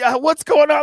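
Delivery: shrill, very high, loud yell. Retelling yelling at the screen during a ladder match: imitating own yelling. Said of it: "I'm yelling at the screen".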